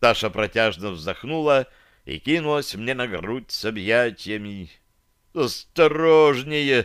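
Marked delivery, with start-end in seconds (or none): 5.3-6.9 high-pitched, pained groan. The narrator, as Tasha bumps his fresh bandage while hugging him, groaning. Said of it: "простонал я".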